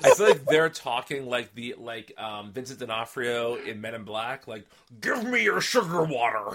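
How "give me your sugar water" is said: ridiculous fake American accent, higher-pitched. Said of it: "putting on this like ridiculous American accent".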